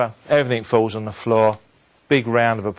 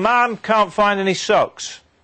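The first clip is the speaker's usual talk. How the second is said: high, slow shouting call. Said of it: "he shouts down to his mum".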